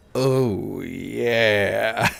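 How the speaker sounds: unsettling rough rasp, creepy and creaky. A streamer imitates the voice that plays when someone donates, a creepy voice. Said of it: "I also have a really creepy voice".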